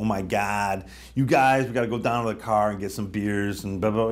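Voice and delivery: really thick, heavy south-side Chicago accent. The speaker demonstrates the way they used to talk, heavy chicago accent. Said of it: "I used to have a really Chicago accent".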